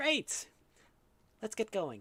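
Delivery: squeaky, very high-pitched voice that swoops. Quoting what something says, very high-pitched voice. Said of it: "It says in a very high pitched voice".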